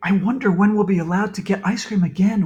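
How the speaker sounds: whispered, whispering voice. Reading a character's line from a story aloud, whispering. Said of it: "whispered Emily".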